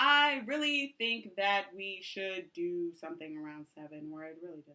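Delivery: low voice, sentence fading away at the end. Giving speaking tips, demonstrating the mistake to avoid: fading off at sentence ends. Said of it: "Don't fade off at the end of your sentences".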